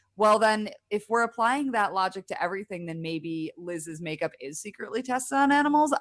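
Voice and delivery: ordinary talk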